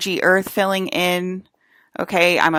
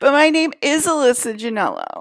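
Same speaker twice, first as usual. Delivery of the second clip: mock crazed, psychopath-sounding voice, higher; 8 semitones higher than usual. Mocking a clone who insists on her name: imitating a psychopath-sounding clone. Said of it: "You sound like a psychopath".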